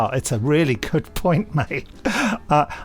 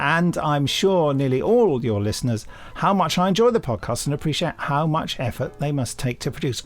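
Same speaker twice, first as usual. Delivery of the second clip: plain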